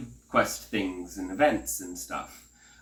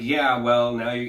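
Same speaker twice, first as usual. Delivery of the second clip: light, acted, snarky sass; 4 dB louder than usual. Retelling own reply to a game character, imitating own snarky reply. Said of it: "I gave her a little snark back".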